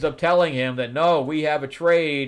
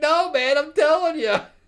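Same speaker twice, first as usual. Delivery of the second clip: high, pleading, begging voice; 14 semitones higher than usual. Acting out a comic scene where Hook pleads with Peter: imitating Hook pleading. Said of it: "and he's pleading".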